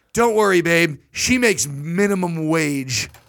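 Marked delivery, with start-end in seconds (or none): none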